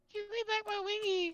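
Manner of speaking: very high, taunting, teasing copycat voice. Mocking another player who keeps asking for the wings back: mocking imitation of another player. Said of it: "you sound like someone trying to get their stinking chicken wings back".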